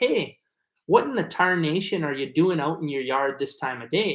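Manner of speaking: Minnesota accent with shifted A's and vowels. Showing how someone from northern Minnesota talks: northern Minnesota accent. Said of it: "someone from the north of Minnesota will say".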